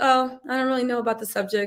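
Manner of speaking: flat bored monotone. Advising how to put off a Gemini by being boring: flat bored monotone. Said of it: "be monotone, have no energy".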